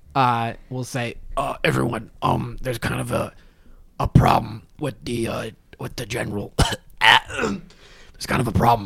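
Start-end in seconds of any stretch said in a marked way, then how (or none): 1.7-8.9 sustained orc character voice. Game master voicing Josh, still keeping up his orc facade, in an orc voice. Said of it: "not dropping the orc facade".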